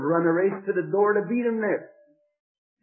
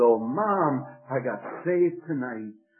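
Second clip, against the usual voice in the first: ordinary delivery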